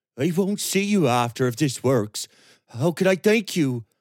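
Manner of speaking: trembling, unsteady. Reading fiction aloud, Roger's reply to the one sending him on his way, voice shaking. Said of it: "his voice shaking".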